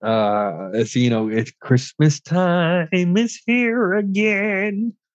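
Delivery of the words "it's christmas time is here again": put-on puppet frog voice. Doing a voice for the others: Kermit the Frog voice. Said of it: "That's my Kermit".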